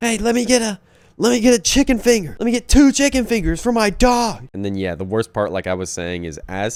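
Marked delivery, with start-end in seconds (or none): 0.0-4.5 very high, loud voice. Retelling a customer demanding chicken fingers: imitating someone being loud. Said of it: "he was really loud".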